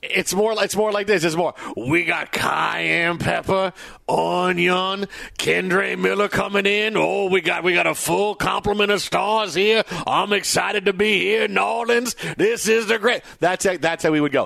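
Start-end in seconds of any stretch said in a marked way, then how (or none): 1.8-13.2 slow Cajun drawl, "onion" drawn out long. Imitating a quarterback talking like a Cajun chef: Derek Carr as Justin Wilson. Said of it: "when you do this impression".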